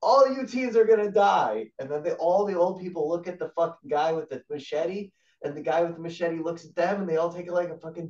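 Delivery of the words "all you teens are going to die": shrill, loud horror-movie killer scream. Pitching a movie plot where a masked killer bursts in: imitating a scream. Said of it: "he screams".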